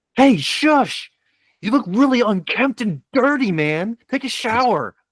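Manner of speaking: very high, jeering, mocking voice. Voicing a citizen character taunting a foe from behind the bar: mocking taunt. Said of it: "I'm gonna cast Vicious Mockery on him".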